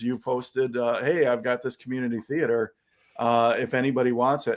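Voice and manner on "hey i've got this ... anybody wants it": ordinary delivery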